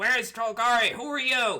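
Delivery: very loud, high, shouted yell. Voicing the large monster calling out to a silhouetted stranger: yelling. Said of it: "yells out again".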